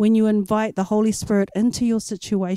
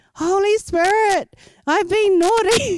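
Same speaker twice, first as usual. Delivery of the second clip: put-on very high, slow, drawn-out childlike crying-out; 10 semitones higher than usual. Retelling hearing an eight-year-old praying in her bedroom: imitating a child crying out. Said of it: "crying out to the Holy Spirit".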